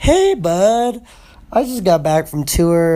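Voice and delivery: hoarse, sick-sounding voice. Leaving a voice message after getting back from tour: raspy voice from being sick. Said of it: "my voice is a little raspy right now".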